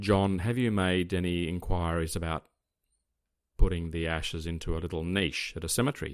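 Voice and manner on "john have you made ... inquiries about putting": usual speaking voice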